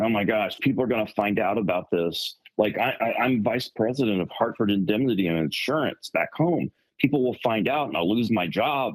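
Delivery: normal talking voice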